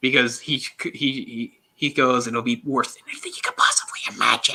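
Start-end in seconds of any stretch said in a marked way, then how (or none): 2.3-4.5 raspy, high, breathy whisper. Retelling a line delivered in the film, imitating a raspy high voice. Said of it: "his voice gets all raspy and high".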